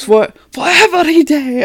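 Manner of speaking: bad imitated angry French accent. Retelling a threat made at a sentencing: imitating an angry vow in a bad french accent. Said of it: "he's doing this in French".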